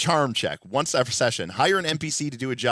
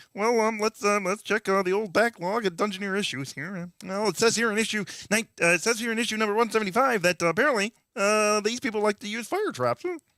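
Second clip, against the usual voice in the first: pitched-up puppet frog voice; 8 semitones higher than usual. Riffing with friends, the speaker slips into a Kermit the Frog voice. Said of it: "bad Kermit".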